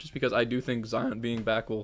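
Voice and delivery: voice cracking and breaking. Discussing which player to trade for, voice cracking. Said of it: "voice crack".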